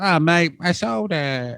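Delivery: put-on Liverpool and Australian accent. Acting out a dirtbag tenant's reply, in a liverpool and australian accent. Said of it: "Liverpool and Australian accent".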